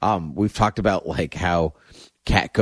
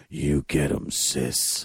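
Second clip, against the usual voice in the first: low, hushed, affected character voice. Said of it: "[name]'s Guardian voice is still super annoying".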